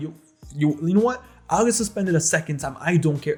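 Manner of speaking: angry, pissed-off, past-caring, defiant tone. Retelling threatening to get suspended again: imitating own past angry self. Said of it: "I was pissed".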